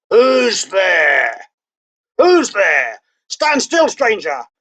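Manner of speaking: growling voice of a huge beast. Narrator voices a huge creature rising to confront a stranger, growling creature voice. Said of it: "said in a growling voice".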